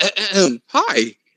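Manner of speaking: mocking put-on voice.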